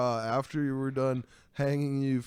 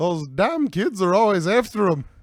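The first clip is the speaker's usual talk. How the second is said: very loud, booming, put-on Irish accent; 6 semitones higher, 9 dB louder than usual. Riffing on a Lucky Charms pun joke, the speaker adds a punchline in an Irish accent. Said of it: "That's my Irish accent".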